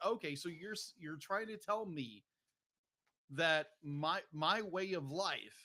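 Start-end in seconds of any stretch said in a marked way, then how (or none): none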